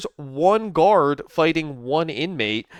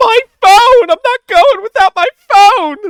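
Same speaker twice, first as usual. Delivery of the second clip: very high, loud shout with voice cracking; 12 dB louder than usual. Repeating what the other person just said about a phone, imitating a voice crack. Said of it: "the voice crack".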